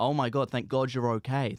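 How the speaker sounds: mock hysterical crying and sobbing. Retelling how a mum turned up at the flat: imitating someone crying in hysterics. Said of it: "in hysterics, like, crying, being like".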